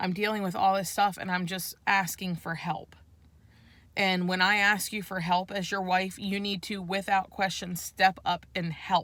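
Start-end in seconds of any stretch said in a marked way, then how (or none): none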